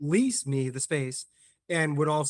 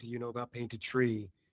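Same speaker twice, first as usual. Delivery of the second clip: put-on under-breath whisper, quieter; 4 semitones lower, 7 dB quieter than usual. Speaker retelling how someone asked him a question, imitating an under-breath whisper. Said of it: "when somebody under their breath asks you".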